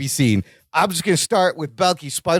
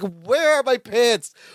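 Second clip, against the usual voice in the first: frantic, high-pitched, panicking, scrambling delivery; 6 semitones higher than usual. Recapping a scene where Larry prepares for the baby, imitating frantic Larry. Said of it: "frantic Larry".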